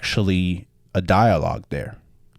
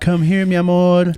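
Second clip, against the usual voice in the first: put-on yell, higher and louder; 11 semitones higher, 4 dB louder than usual. Retelling a movie scene where a woman calls a boy: imitating a woman yelling. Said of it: "a woman yelling".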